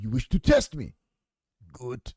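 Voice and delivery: Russian accent in an action movie villain style. Asked to do a Russian accent, speaker quotes a film line, Russian accent, Rambo III villain. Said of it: "do a Russian accent".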